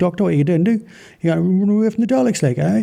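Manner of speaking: thick, heavy Geordie accent, spoken really fast. Describing an accent outsiders can't follow, the speaker demonstrates a thick, fast geordie accent. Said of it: "Talking with a thick Geordie accent, like, and really fast".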